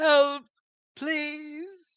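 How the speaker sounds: high, loud crying out, done badly. A player projects Opal crawling through rubble, crying for help: bad Opal impression. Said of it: "That's a terrible impression of Opal".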